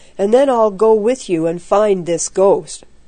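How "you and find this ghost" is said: ordinary delivery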